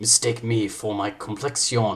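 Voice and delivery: bad, botched, fake put-on Spanish accent. Reading a play aloud, the speaker delivers the line in a bad Spanish-sounding accent. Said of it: "That that was Spanish".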